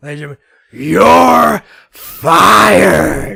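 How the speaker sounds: booming, drawn-out, slow, rough shout. Answering a request for a best Vince McMahon impression: Vince McMahon impression. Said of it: "give us your best Vince McMahon".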